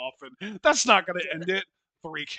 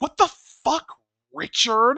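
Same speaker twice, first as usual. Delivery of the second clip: put-on kid's voice, high, raised, scornful, disdainful; 9 semitones higher, 7 dB louder than usual. Retelling a video of kids playing Frisbee: imitating a kid's disdainful tone. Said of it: "That's that exact same tone".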